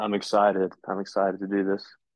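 flat, deadpan monotone, low-energy and unenthusiastic. A podcast co-host answers how he's doing before the preview: flat, unenthusiastic. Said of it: "you sound thrilled, man".

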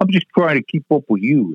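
put-on Boston accent. Retelling what Donnie said while they worked loading trucks: Donnie's Boston accent. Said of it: "in this Boston accent".

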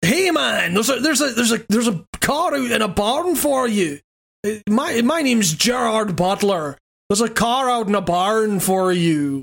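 put-on slow, unhurried Edinburgh Scottish accent. Imitating a game character who tells the player about a car: imitating an Edinburgh accent. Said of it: "like, Edinburgh accent".

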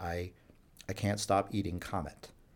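mock under-breath mutter. Retelling a man in jail confessing to him, imitating quiet muttering. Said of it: "sort of muttering very quietly under his breath".

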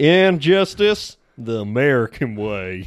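put-on American southern accent. Playing an accent game, the speaker delivers a film quote in a Southern US accent. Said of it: "Just Southern US".

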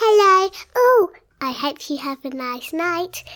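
voice of a little toy bunny puppet. Retelling a bedtime, speaking as a bunny puppet to Daddy, bunny puppet voice. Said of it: "I did the voice of the bunny".

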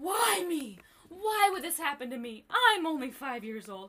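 put-on screaming, high, wailing little-kid voice. Retelling a child getting stung by a bee, imitating Archer wailing. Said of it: "he was screaming, wailing".

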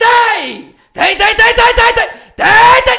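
very high, very loud, very slow yelled outburst. Retelling a man on a Facebook live suddenly yelling, imitating him shouting.

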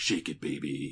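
low, slow, growling action-hero voice.

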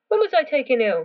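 forceful, very loud, high-pitched, demanding voice. Narrator reading the ill woman's question to a visitor, demanding. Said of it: "demanded Mrs. Rymer".

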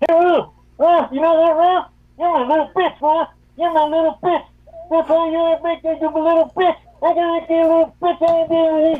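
very high, very loud, shrill rant. Calling in to the show, doing a Johnny Savage impression. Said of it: "That was a good Johnny Savage impression".

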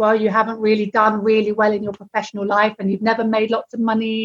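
usual speaking voice

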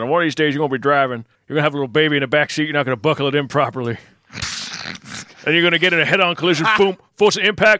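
put-on heavy backwoods country accent, rattled off quickly. Retelling what a teacher told the students, in a deep country accent impression. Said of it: "the deepest country accent you can tell".

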